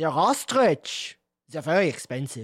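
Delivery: put-on speaking with a German accent. A player answers a character asking where the feathers were found, German accent. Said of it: "That was a German accent".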